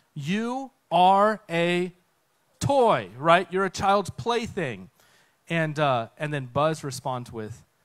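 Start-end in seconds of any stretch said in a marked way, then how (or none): 0.1-4.8 furious, loud, slow angry shout. Retelling a story where one character yells at another: retelling an angry yell. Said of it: "He gets so mad that he yells at him".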